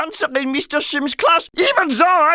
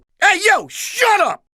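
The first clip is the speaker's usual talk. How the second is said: tough-talking schoolyard bully voice; 4 semitones higher than usual. Showing off different voices, tough guy bully voice. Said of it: "When I talked like a tough guy bully".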